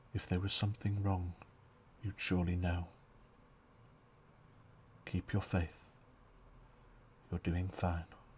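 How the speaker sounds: gentle, quiet, soft-spoken woman's voice. Narrating a church scene, an unseen woman speaks to the listener: quiet, soft female voice. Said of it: "quiet, soft female voice".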